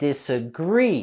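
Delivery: disagree with rising stress on final syllable -gree. Pronunciation practice for the word disagree: rising stress on 'gree'. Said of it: "we're going to raise our voice and intonation on the last syllable".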